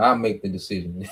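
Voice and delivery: mock reluctant, humbled tone without pride. Retelling how he had to admit a decision: imitating a reluctant admission without pride. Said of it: "he had to get pride out of him".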